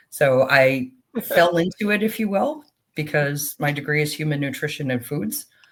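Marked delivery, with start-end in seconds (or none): none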